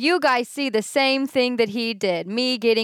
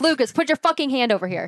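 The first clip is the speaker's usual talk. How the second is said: put-on irritated, annoyed little-kid voice; 3 semitones higher than usual. Retelling how she told Lucas off, mimicking an annoyed little brother. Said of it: "like a annoyed little brother".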